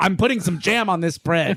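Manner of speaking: normal talking voice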